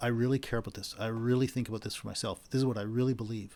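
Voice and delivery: ordinary talk, nothing marked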